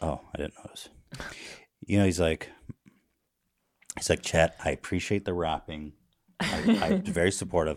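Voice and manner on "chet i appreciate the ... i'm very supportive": swooping, animated dad voice. Acting out a father asking his son to stop: imitating Tom Hanks. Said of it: "I'm Tom Hanks, Chet".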